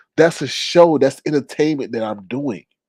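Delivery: ordinary delivery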